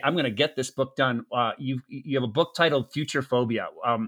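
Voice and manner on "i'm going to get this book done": ordinary delivery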